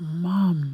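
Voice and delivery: mock crying, tearful voice. Retelling breaking down at seeing mum in hospital: imitating own crying. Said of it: "I broke down crying".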